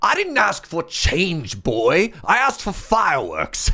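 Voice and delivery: rough, swooping, put-on English accent. Retelling a man answering a kid who offered change, in an English accent. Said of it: "That's the best English accent I can do".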